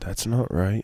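muttering under breath. Retelling what one mutters at church: imitating muttering under breath. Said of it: "just under my breath going".

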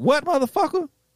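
furious, high-pitched, snapped-out delivery.

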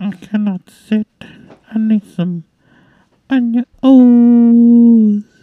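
bad grandma voice, very high and loud. In a mock commercial break for an ointment cream: bad grandma impression. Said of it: "that was the worst Grandma impression".

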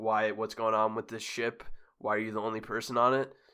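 ordinary talk

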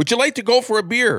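acted, loud, high-pitched, bellowing shout. Telling a joke, a man shouts his question at the centipede: retelling a loud shout. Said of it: "So he shouts the question loudly".

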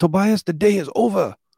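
put-on Czechoslovakian accent. Tobias quoting a woman's words to him, in her Czechoslovakian accent. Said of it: "In her fucking Czechoslovakian accent".

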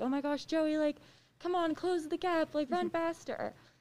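high, crazed, fired-up yelling. Recalling shouting during a race, retelling own yelling. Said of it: "I'm like yelling".

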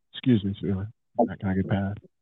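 low, put-on, laid-on-thick sexy voice. Showing how he'd ask a woman to let him past: sexy voice. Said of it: "put the sexy voice on".

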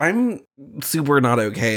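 usual speaking voice

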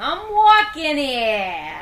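swooping, stretched, cartoonish Brooklyn accent laid on thick. Discussing a movie character, riffing on how he would sound: Darnell in cartoon Brooklyn accent. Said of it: "a cartoon Brooklyn accent".

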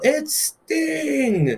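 loud high-pitched yell.

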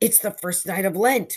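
gasping. The narrator, seeing the cause, speaks to Nick, gasped. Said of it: "I gasped".

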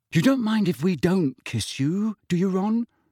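fake worried tone, falsely anxious, slightly high. Fred asks Ron a question, falsely anxious. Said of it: "in a falsely anxious voice".

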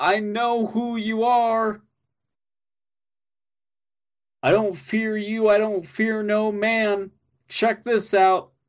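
put-on high yelling, each word drawn out. Telling the story, Neurontia suddenly starts yelling at them; imitating Neurontia yelling. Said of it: "Neurontia just starts yelling".

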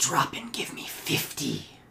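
loud, high hissing voice. Narrator describes a voice commanding the player amid a battle, hissing. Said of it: "hissing voice that says".

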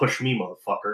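very quiet, low mutter under the breath. Playing a character walking past a corpse, the player speaks the character's line: muttered under breath. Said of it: "I mutter under my breath".

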